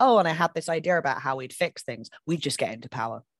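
normal talking voice

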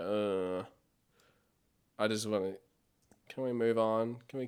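put-on bored creature voice. Voicing Fizzgig, who looks bored in the first shots: imitating a bored Fizzgig. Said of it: "he just looks so bored".

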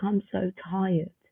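soft, play-acted tearful voice, words through sobs. Recalling cuddling a childhood pony, the speaker acts out past crying. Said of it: "Cuddling him and crying".

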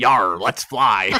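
put-on pirate voice, pirate talk with yar. Joking about Burnham on Discovery doing a pirate voice, in a pirate voice. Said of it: "Burnham doing a pirate voice".

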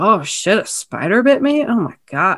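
dazed, confused, drugged-sounding mumble. Retelling a film scene, imitating a drugged-up, confused character: mumbling like drugged-up Justin Long. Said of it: "the way he was just mumbling".

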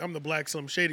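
ordinary talk

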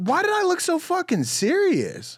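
high, rising, incredulous tone of disbelief.

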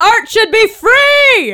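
very high, shrill, freely drawn-out yelling. Answering in character while pinned against a wall: yelling in character. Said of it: "I'm just gonna keep yelling that".

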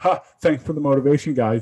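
mock-sarcastic tone. Retelling how a coach commented on their post: imitating a sarcastic thank-you. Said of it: "like totally being sarcastic".

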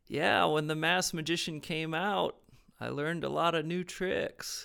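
put-on southern US accent, drawling, vowels stretched. Quoting Lance's line about learning tricks: southern drawl Lance impression. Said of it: "your southern drawl for your Lance impression".

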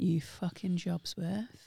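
mock under-breath mutter. Recalling what they said to a woman letting someone in ahead at Argos, retelling a muttered insult. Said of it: "under my breath".

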